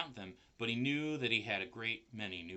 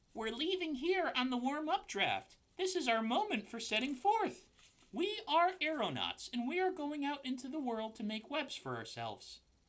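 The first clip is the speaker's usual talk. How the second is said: put-on tiny, very high, sing-song baby spider voice. A little spider stops to talk before leaving on the warm draft; baby spider voice. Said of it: "that's my best baby spider voice".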